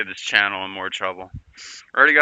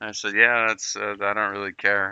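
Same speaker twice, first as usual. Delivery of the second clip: plain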